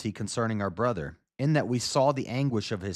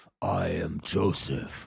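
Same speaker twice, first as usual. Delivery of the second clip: deep, rough masked-hero voice, dropped low; 6 semitones lower, 3 dB quieter than usual. Acting out Joseph speaking to his brothers behind a mask: deep Batman voice. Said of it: "He's, like, doing a Batman right now".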